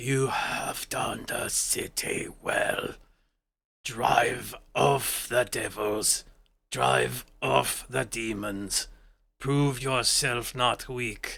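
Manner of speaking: harsh, hoarse, very raspy zombie voice. Game narrator voices a creature with glowing orbs stepping forward: very raspy voice. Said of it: "in a very raspy voice goes".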